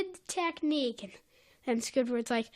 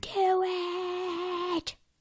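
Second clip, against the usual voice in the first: put-on yelling, much higher; 4 semitones higher than usual. Joining a retelling of two characters yelling at him: acting out a yell. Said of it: "are yelling at him".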